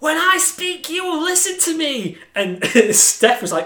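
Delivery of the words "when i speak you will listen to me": screeching, high-pitched. Describing how she screeches at everyone, screeching like Vickie Guerrero. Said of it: "She screeches at everyone".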